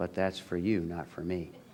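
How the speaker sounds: mock mutter under the breath. Retelling what was said quietly to a priest: imitating muttering under the breath. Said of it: "under my breath I said".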